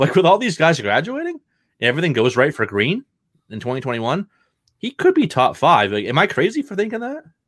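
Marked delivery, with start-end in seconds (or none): 1.8-7.2 excited, swooping voice climbing higher toward the end.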